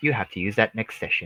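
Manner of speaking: deep, very low, hushed storyteller narrator voice. Responding to another player's line at the game table, in narrator voice. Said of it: "Narrator voice".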